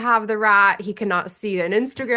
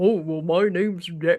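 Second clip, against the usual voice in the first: silly, goofy put-on cartoon dog voice; 3 semitones lower than usual. Imitating how people give their dogs a voice: goofy dog voice. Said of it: "goofy, goofy voice".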